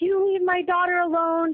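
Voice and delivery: mock screaming, high-pitched. Retelling a man on a plane yelling at another passenger: imitating a man screaming. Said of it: "is screaming at him, like".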